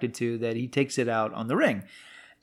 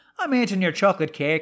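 heavily laid-on Irish brogue, thick, pitched up; 7 semitones higher, 3 dB louder than usual. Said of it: "really hammering that accent".

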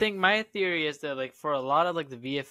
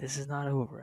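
put-on menacing, threatening voice, quieter; 3 semitones lower, 7 dB quieter than usual. Jokingly threatening DC over a lost movie role: mock menacing like Liam Neeson in Taken. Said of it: "he sounds like Liam Neeson in Taken right now".

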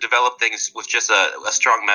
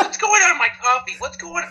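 put-on high-pitched elderly woman voice; 13 semitones higher than usual.

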